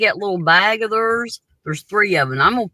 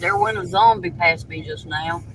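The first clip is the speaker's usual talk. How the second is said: normal talking voice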